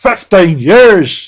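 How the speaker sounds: loud, booming Northern Irish accent. Reading out comments on an episode, trying an accent: northern irish accent. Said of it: "my best uh, Northern Ireland accent".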